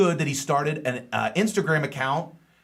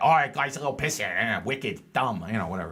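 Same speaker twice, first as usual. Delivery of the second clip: low, put-on local Boston accent; 4 semitones lower, 3 dB quieter than usual. Showing how someone in Boston would talk, in a Boston accent. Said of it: "Imagine in a Boston accent".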